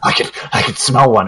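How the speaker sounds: mock odd breathing sounds. Describing a game character who starts breathing funny: imitating funny breathing. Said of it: "He starts like breathing funny".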